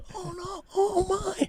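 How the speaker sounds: very high cartoon little piglet voice. Trying out character imitations with friends, doing a Piglet impression. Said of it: "That's pretty good".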